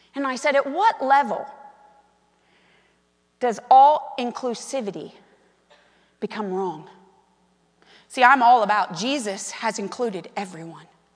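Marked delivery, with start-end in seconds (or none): 0.6-6.9 sweetest, kindest, gentle voice. The speaker retells what she asked a woman she was paying, in her kindest voice. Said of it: "in the kindest voice".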